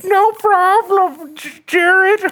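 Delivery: very high, slow voice drawn out of the mouth's corner. Voicing the toaster Toasty answering its owner: talking out of the side of the mouth. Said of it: "do something on the side of your mouth and go".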